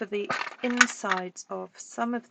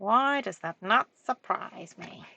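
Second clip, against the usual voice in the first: parrot-like cartoon voice; 2 semitones lower than usual. Speaker reacts to what Janine says, in the parrot from Aladdin voice. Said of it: "I'm trying to do it in the voice of the uh, parrot from Aladdin".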